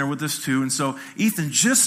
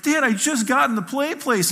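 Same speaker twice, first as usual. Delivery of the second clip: play-acted child talking through tears, high pitch; 10 semitones higher than usual. A father retells his crying son's reply after the play place: imitating a crying child. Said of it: "And he's crying".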